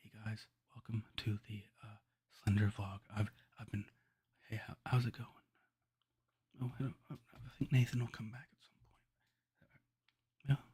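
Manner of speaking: hushed, very quiet, barely-there, soft-spoken voice. Speaker gives an impression of someone who talks too quietly: Jeff impression. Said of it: "let me give my Jeff impression".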